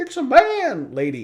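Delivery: very high, loud, squeaky, silly cartoon voice. Speaker describing a member of a group, in a goofy voice. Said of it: "sorry for the goofy voice".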